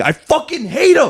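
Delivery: acted-out very high, drawn-out screamed outburst. Retelling a basketball blowout at the arena: retelling own screaming. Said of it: "I just kept screaming".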